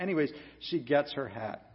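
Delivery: plain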